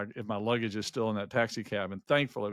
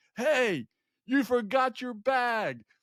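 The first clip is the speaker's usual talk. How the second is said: very high-pitched, put-on yelled call; 13 semitones higher than usual. Retelling how a guy yelled after them as they left a cab, imitating the yell. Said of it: "This guy yells at me".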